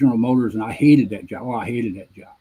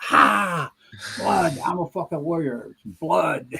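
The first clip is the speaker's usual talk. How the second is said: drawn-out, pitched-up yell; 6 semitones higher than usual. Retelling a fight in the barracks, imitating Jerry Arnold screaming: imitating someone screaming. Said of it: "Arnold is screaming and yelling".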